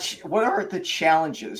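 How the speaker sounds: cracking voice. Asking Cindy a question, voice cracking. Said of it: "my voice just cracked".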